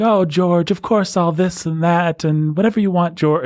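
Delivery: sugary sweet tone. Discussing a woman who acts sweet with George, imitating a sugary sweet voice. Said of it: "When she's acting all sweet with him".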